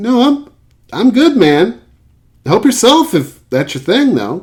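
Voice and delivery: very high, overly awkward, squeaky voice. Retelling a companion's reply at the urinal; imitating Thomas, awkward and squeaky. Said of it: "in his best sort of trying not to sound awkward, but overly awkward, squeaky voice".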